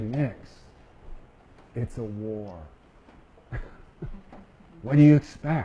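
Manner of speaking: very quiet, soft delivery. Retelling a scene where Winters answers Nix, Winters speaking quietly. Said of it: "Winters just real quietly say".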